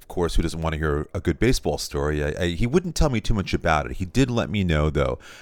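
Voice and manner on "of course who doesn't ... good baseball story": ordinary talk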